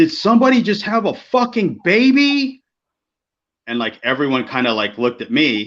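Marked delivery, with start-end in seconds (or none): 0.0-2.6 put-on very high, all-out screech, stretched out. Retelling how someone burst in and shouted: imitating someone screaming. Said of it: "he screams at the top of his lungs".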